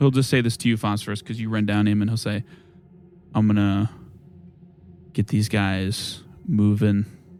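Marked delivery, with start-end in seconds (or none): 3.3-7.0 hushed, slow, quiet tones. Voicing Magnis addressing Phosphorus: Magnis in hushed tones. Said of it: "kind of in hushed tones".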